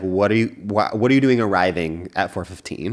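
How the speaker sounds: ordinary delivery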